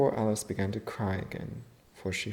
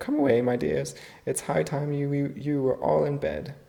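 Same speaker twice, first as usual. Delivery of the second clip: high, quavering, wavering, trembling voice; 5 semitones higher, 5 dB louder than usual. A canary calls out to its children to come away, in a trembling voice. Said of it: "in a trembling voice".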